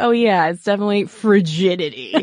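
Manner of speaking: put-on, mocking, sarcastic tone. Imagining how he might have meant it, imitating someone sarcastic. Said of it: "what if he were being sarcastic? Like".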